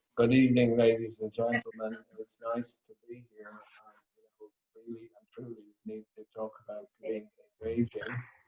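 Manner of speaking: very low, dull, flat droning monotone. A speaker on engaging delivery shows how a dull talk opening sounds, flat monotone. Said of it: "nobody would listen if you didn't have some energy in your voice".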